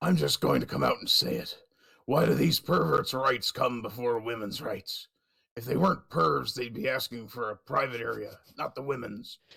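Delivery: sounds just like a pirate. Reading aloud a commenter's message, in a pirate-like voice. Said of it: "You sound more like a fucking pirate".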